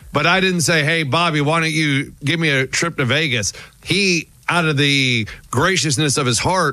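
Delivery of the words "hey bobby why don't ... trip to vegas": usual speaking voice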